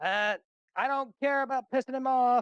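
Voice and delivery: drawn-out, very loud, high holler. Voicing a character who shouts over the others: shouting over others. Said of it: "You just hear him shout over".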